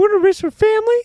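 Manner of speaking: put-on very high, loud nine-year-old kid voice. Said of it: "Little nine-year-old".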